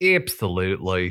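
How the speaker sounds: "absolutely" in a put-on Australian accent. Chatting, saying the word absolutely in an Australian accent. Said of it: "I have to say it in an Australian accent".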